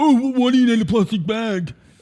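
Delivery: put-on teenage voice. Retelling a young person's question about a bag: imitating Mister Ninety-seven's teenage voice. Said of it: "in his teenage voice was like".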